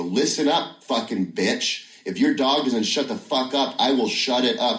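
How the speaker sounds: acted, high-pitched, furious angry yelling shout. Retelling a scene tried out in front of onlookers, yelling at a woman. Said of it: "I'm yelling at her".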